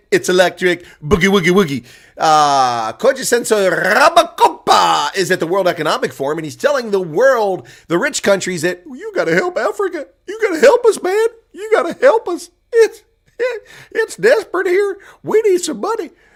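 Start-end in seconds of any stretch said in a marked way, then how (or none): 8.8-16.0 put-on Southern accent, pitched very high. Acting out a speaker at the World Economic Forum addressing rich countries, in a southern accent. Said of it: "I realize that's a southern accent".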